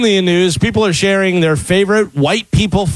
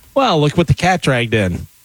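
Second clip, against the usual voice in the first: ordinary delivery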